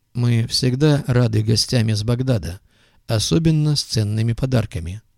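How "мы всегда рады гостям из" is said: usual speaking voice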